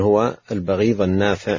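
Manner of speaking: plain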